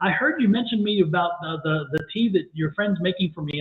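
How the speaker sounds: ordinary delivery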